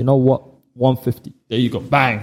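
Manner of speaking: ordinary delivery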